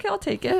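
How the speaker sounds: high, breezy, casual, shrugging tone.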